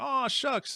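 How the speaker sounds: put-on old country rancher's voice. Retelling an interview greeting from a ninety-one-year-old guest: imitating Bob Gimlin. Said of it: "he's like the old rancher".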